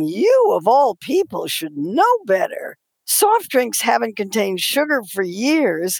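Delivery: put-on indignant, outraged, reproachful tone. Quoting a lawyer's letter aloud: imitating an outraged lawyer. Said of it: "their lawyer wrote me an outraged letter".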